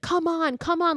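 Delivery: acted-out, very high, pleading, begging scream. Retelling a film scene where a character screams into the mist: imitating a character screaming. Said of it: "he's screaming into the mist".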